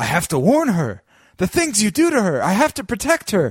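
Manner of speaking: put-on frantic, high panicked voice, climbing as it goes. Retelling a character's lines from a show: imitating panicked speech. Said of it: "He starts panicking".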